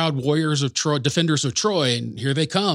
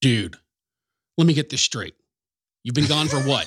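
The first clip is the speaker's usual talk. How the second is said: mock sarcastic delivery. Retelling the parents' reaction to Paris, imitating a sarcastic delivery. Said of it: "the most sarcastic delivery".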